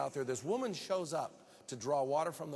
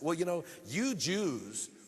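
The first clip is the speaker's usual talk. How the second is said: mock biting, snide, sarcastic, attacking tone; 3 semitones higher, 4 dB louder than usual. Retelling how a woman struck back once her sin was exposed: mock-sarcastic retort. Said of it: "she attacks him sarcastically".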